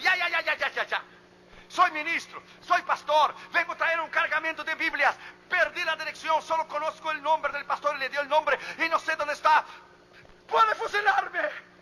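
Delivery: high, loud, nervous shouting.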